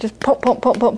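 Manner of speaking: ordinary talk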